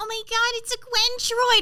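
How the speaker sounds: high, loud, squeaky put-on nerdy voice. Recalling an audition for Frankie with a put-on affect: nerdy Frankie audition voice. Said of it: "she was like really nerdy".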